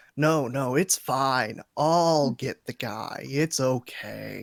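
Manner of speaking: put-on sarcastic voice. Voicing Sverd reaching the body, speaking as him: sarcastic Sverd voice. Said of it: "he'll say entirely sarcastically".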